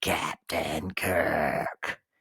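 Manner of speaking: very low, deep, raspy voice. Remembering the Gorn calling out to the captain, raspy Gorn voice. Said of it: "I can still hear his raspy voice calling out".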